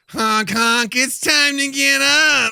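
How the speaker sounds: shrill, booming, high, loud, very slow, drawn-out shout. Doing the wake-up call voice again for the others. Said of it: "I want that voice".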